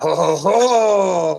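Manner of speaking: slow, loud villain character laugh.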